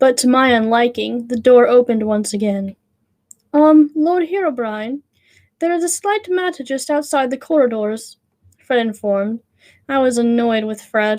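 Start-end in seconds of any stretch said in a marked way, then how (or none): 3.5-8.2 put-on English accent with butler manner. Reading a story aloud, voicing a skeleton butler: put-on English butler accent. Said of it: "his nice English accent".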